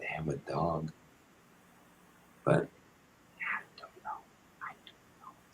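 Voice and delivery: hushed whisper. Talking about the neighbors across the street, whispering. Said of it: "Why are we fucking whispering?".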